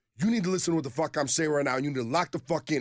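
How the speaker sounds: mock heated, loud, high-pitched angry yelling. Retelling a stranger heard from a restroom, imitating angry phone yelling. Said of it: "sounds like there's two dudes fighting".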